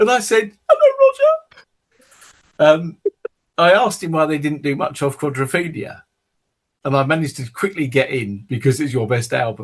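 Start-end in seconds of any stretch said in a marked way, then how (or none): 0.7-2.8 put-on very high, jittery, swooping, nervous teenage voice. Retelling phoning in to a radio interview at sixteen: imitating own nervous teenage voice. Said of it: "my voice sounds like this. I'm so nervous".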